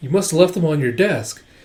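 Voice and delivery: ordinary talk, nothing marked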